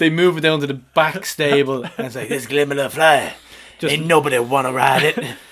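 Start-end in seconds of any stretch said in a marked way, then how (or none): 2.3-5.3 put-on 1920s New York gangster voice and accent. Voicing stable hands moving a horse to the back stable, in a 1920s New York gangster voice. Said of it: "Why do I sound like a 20s New York gangster".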